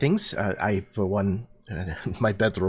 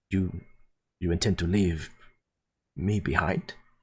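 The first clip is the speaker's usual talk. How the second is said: voice dropped down low. Voicing a character who turns away from a statue, lowered voice. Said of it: "lowers his voice".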